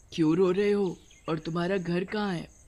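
ordinary delivery

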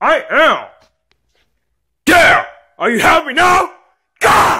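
very high, slow, rising, drawn-out scream. Told to turn on the lights, a young man screams back while doing it. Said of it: "stop screaming!".

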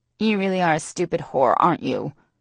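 flat, nasal, lifeless voice. A narrator reads a woman's taunt at the frightened narrator; flat, nasal, almost dead voice. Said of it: "Her nasally voice sounds so flat, almost dead".

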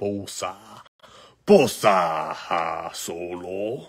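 very deep put-on voice, pitched way down. Opening trading card packs, announcing a Joey Bosa card in a Hutt impression. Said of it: "my best job with a Hutt impression".

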